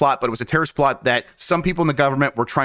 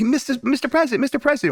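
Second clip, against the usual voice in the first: very high, cute little voice; 11 semitones higher than usual. Retelling a show scene where a woman calls the President: Mandy's cute little voice. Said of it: "with her cute little voice".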